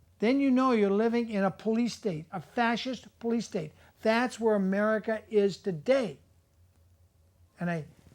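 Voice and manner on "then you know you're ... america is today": normal talking voice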